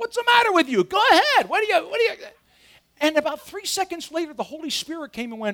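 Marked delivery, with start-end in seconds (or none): 0.0-2.2 much higher, louder shouting yell. Recounting yelling at someone from inside his car, retelling yelling in the car. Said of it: "And I'm yelling in my car".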